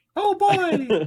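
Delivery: voice pushed way up in pitch and loud. Asked for a Mickey Mouse voice, the speaker offers theirs: Mickey Mouse voice. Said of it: "that's mine".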